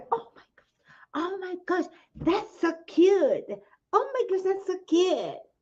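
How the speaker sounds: play-acted, high-pitched, starstruck fawning gush. Retelling how Americans react to a UK accent: imitating gushing Americans. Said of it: "they go".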